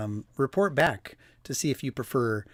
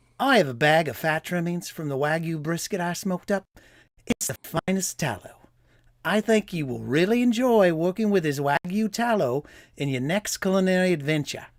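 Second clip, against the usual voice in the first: put-on Australian accent, higher; 4 semitones higher, 3 dB louder than usual. Reading a customer's review aloud in an Australian accent. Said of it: "I gotta say it like a s-, an Australian".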